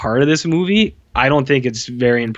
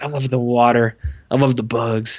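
put-on cheesy delivery. Retelling a movie scene, imitating a cheesy line delivery. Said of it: "it comes off really cheesy".

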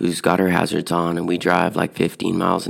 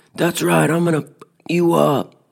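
mock child yelling, much higher pitch; 11 semitones higher than usual. Retelling a run-in on the road, the speaker quotes an 18-year-old kid, imitating a kid yelling. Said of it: "He keeps yelling at me".

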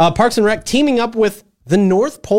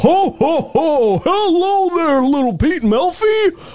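high, slow, goofy character voice. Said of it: "I sound more like Goofy there".

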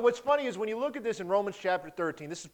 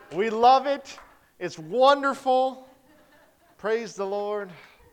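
loud, slow, fake-cheerful, laid-on sarcastic enthusiasm; 5 dB louder than usual. Introducing the day's topic to listeners: sarcastic fake enthusiasm. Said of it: "the sarcasm that I'm laying down".

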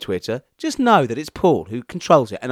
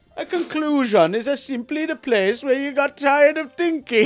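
put-on Welsh valleys accent; 11 semitones higher than usual. Reading a quote aloud when asked by the other speaker, in a welsh accent. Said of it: "And in the accent".

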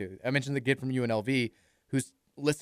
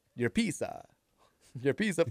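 put-on Italian accent; 4 dB quieter than usual. Joking about ordering at a pizza place: mock Italian accent. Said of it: "Why are you talking like that?".

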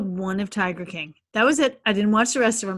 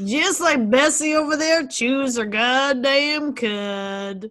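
put-on hillbilly drawl, cud drawn out; 2 semitones higher than usual. Joking around with the group, speaking in a put-on hillbilly accent. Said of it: "Everybody loves our hillbilly accents".

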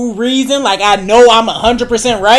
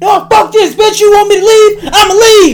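put-on shrill, heated yelling, pitched way up; 11 semitones higher, 4 dB louder than usual. Retelling a fight with her over his keys, acting out yelling. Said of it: "I'm yelling like".

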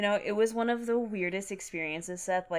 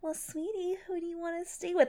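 put-on very high-pitched baby-talk voice; 11 semitones higher than usual. Mocking how adults ask a child which parent to stay with: baby voice. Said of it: "do it like a baby voice".

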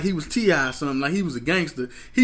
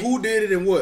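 normal talking voice

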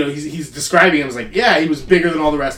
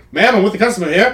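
rapid-fire, fast-talking 1940s film-style patter; 5 semitones higher than usual. Retelling a scene from a 1949 christmas film: fast-talking 1940s guy voice. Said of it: "those fast talking nineteen forties guy".

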